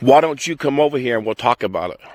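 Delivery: ordinary talk, nothing marked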